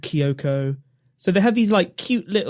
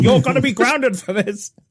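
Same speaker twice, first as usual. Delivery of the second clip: imitated screaming man, higher; 8 semitones higher, 3 dB louder than usual. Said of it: "the colonel is screaming at the little girl Kyoko".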